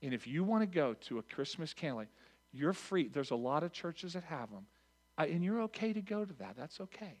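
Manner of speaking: very gentle, loving voice. Retelling what you told someone who wanted Christmas Eve church: retelling words said very gently. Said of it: "I say it very gently, very lovingly".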